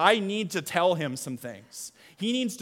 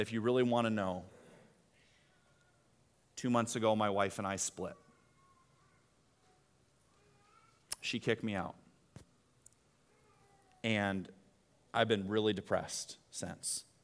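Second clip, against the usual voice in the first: mock crackling, breaking voice; 8 semitones lower, 9 dB quieter than usual. Retelling what a man finally admitted after a long silence, imitating a crackling voice. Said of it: "in kind of a crackling voice said".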